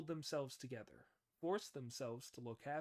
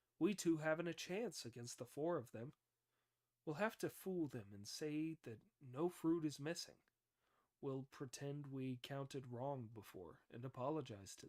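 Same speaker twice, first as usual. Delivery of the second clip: ordinary delivery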